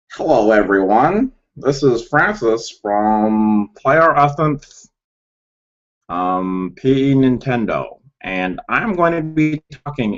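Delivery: slow, horrible space-alien voice. Opening a video introduction as its host, horrible alien impression. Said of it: "that was a horrible alien impression".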